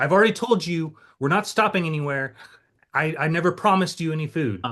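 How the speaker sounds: put-on irritated, agitated tone. Retelling what a woman said to him, imitating her agitated tone. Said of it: "she's very agitated with me".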